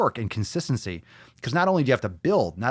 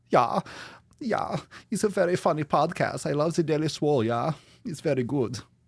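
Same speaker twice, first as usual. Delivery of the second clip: fake, campy German accent; 4 semitones higher than usual. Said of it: "I cannot say that without going".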